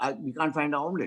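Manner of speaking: ordinary delivery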